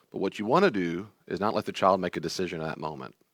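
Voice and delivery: ordinary talk, nothing marked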